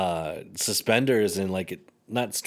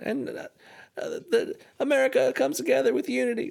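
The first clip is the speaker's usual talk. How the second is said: very high-pitched, squeaky voice pushed way up. Imitating a former president's recent speech: high-pitched Bill Clinton impression. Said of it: "way up here".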